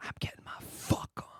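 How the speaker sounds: breathy whisper under the breath, very hushed. Showing how the line would have sounded back in the shared apartment: whispering. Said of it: "Oh, you would whisper".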